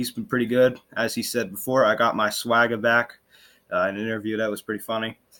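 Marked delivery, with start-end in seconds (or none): none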